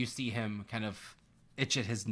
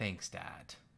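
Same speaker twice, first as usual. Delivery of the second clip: mocking, dry sarcastic delivery; 3 semitones lower, 6 dB quieter than usual. Voicing a girl answering her father's warning about drinking: sarcastic.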